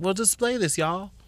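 put-on hushed country accent. Imagining what she told sick kids she visited, in a put-on country accent. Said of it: "That was my country accent".

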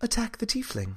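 very soft, hushed, high-pitched voice. A voice in a player's head gives a command, in a very soft voice. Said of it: "the voice just very softly says".

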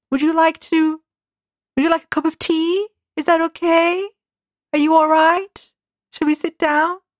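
irritating lilt, every phrase rising like questions. Imitating how a character in a series speaks: lilting questioning tone. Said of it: "that kind of lilting questioning like".

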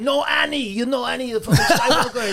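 put-on Persian accent. Telling how a club owner went off on Monty Hoffman, do a put-on Persian accent. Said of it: "he has that fucking accent".

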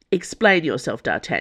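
ordinary talk

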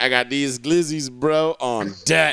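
put-on boastful, bragging voice. Joking about a hot dog race, imitating Joey Chestnut. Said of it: "He's just like".

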